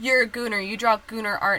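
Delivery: normal talking voice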